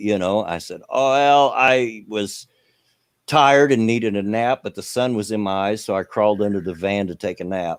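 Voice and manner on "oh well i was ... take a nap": ordinary delivery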